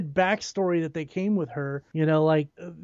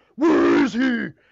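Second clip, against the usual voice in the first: put-on extremely gruff growl, louder; 4 semitones higher, 6 dB louder than usual. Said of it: "be extremely gruff".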